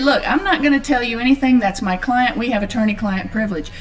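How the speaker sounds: plain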